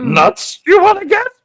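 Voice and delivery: very high, small alien voice. Asking Mike to redo the line, then reading it in a Yoda voice. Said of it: "do it again".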